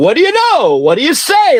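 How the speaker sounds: very high, sing-song, swooping voice. Retelling a man popping out of an SUV: imitating Anthony's greeting. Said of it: "Like that".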